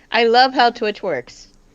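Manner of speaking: plainly insincere sarcastic tone. Remarking on how Twitch counts phone viewers, sarcastic. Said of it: "Is that sarcasm?".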